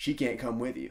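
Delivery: ordinary talk, nothing marked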